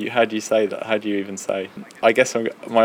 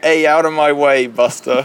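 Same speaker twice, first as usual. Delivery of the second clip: loud, high, brash, cheesy bad American accent; 5 semitones higher, 7 dB louder than usual. Explaining how people act in America, in a bad American accent. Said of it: "That wasn't my best American accent".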